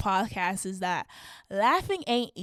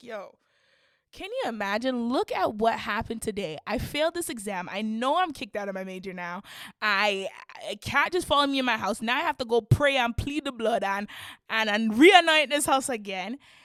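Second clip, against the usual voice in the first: ordinary talk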